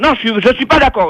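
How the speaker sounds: high, furious, angry shouting. On the phone, refusing what the other person asks: shouting on the phone. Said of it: "ne crie pas comme ça".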